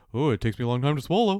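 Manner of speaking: put-on voice of a human giraffe. Imagining being a human giraffe with a long neck: giraffe voice. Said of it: "I also have that voice".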